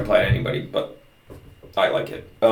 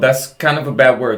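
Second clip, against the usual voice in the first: normal talking voice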